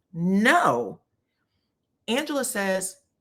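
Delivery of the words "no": drawn-out, dismissive, sassy no with attitude. Retelling a cast member's answer: imitating a "no" with attitude. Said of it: "like, with an attitude".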